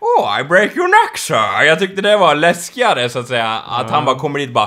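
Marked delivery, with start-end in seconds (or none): 0.0-1.6 posh grand aristocrat voice, slow, swooping and drawling. Recalling how Bane sounded when he spoke, in a posh aristocratic Bane voice. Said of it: "när han lät så här aristokratiskt bara".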